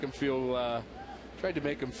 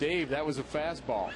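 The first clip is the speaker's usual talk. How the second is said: ordinary talk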